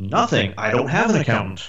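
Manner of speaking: put-on self-satisfied, proud, boastful sing-song delivery. Retelling a conversation with a business coach, answering his question; mock-proud reply. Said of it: "And I very proudly said".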